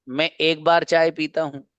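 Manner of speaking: ordinary talk, nothing marked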